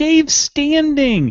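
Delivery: mock thrilled outburst, very high-pitched. Retelling a friend's excited reaction to someone standing: imitating Sean's excited exclamation. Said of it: "And Sean got so excited. He was like".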